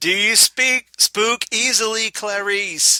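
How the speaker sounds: put-on shouting boss voice. Reading a Doctor Lecter line as Gordon Cole: shouting Gordon Cole voice. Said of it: "I don't know why you're shouting".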